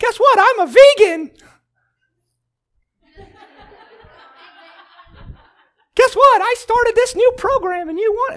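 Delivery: very high-pitched cartoon squeak. Acting out someone announcing a lifestyle change, almost in a Mickey Mouse voice. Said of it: "That's a Mickey Mouse voice almost".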